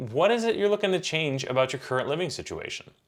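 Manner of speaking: genuinely curious and inquisitive, pitch rising. Example question showing the right tone for asking: curious tone. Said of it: "you can hear that I'm sounding curious".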